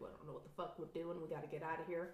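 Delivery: soft, fast, frightened rush.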